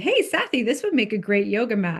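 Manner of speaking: playful, half-serious, swooping delivery, acted out. Speaker retells what she said to sathi, retelling a half-joking remark. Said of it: "I said half jokingly to Sathi".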